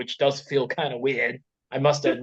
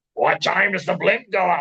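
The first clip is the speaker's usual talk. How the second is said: mock angry, hateful voice, pitched up; 6 semitones higher, 4 dB louder than usual. Retelling how Avery did the voice: imitating an angry Mister Wood. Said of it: "how I imagine Mister Wood being, just so angry".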